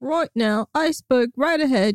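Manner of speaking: badly done fake British accent, pitched high. A host showing off a British accent, in a bad British accent. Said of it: "a British accent".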